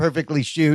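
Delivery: ordinary delivery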